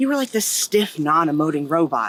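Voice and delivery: ordinary talk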